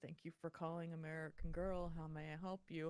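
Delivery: low, flat, uninterested bored monotone. Coaching people not to sound uninterested on calls: flat, uninterested phone greeting. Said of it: "making sure that you sound like you're interested and not, not like".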